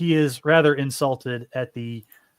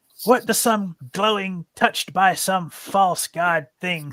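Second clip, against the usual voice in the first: mocking, taunting old witch voice, higher pitch; 6 semitones higher than usual. Voicing a frail woman making fun of a player: mocking witch voice. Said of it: "She's going to start making fun of you".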